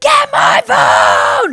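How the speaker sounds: very high, loud, shrieking panicked scream. Recalling an emergency, quoting the other speaker shouting to their kid, retelling a panicked scream. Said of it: "I started screaming to to our kid".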